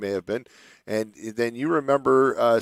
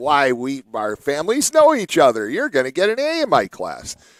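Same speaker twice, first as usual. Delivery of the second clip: imitated nasal, nasally voice, pitched higher; 3 semitones higher, 4 dB louder than usual. Retelling what an english teacher said on the first day: imitating a teacher's nasal voice. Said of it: "she had kind of this nasally voice".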